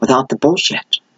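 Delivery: hushed, library-quiet whisper. Speaker, mid-explanation, suddenly drops into whispering. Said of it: "I don't know why I'm whispering".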